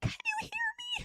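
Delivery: very high, squeaky voice, nearly gone. Retelling losing their voice after days of talking: imitating a squeaky lost voice. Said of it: "I was squeaking out the words".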